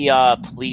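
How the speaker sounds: ordinary delivery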